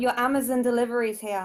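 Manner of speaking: ordinary delivery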